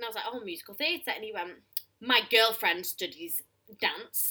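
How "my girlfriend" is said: put-on stressing 'my girlfriend', said louder. Retelling how a man kept bringing up his girlfriend, stress on 'my girlfriend'. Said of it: "and he said it like so".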